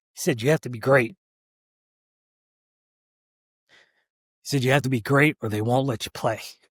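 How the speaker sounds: almost choked up, emotional, voice catching. Recalling the most impactful advice from a dad: almost choked up. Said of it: "I'm almost getting choked up".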